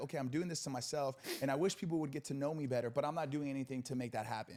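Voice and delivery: plain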